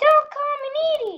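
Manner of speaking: character voice pushed way up, very high. Doing an impression of Needle from BFDI. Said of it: "my best B F D I Needle impression".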